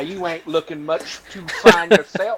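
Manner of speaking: put-on Southern US accent. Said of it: "what's with the southern drawl?".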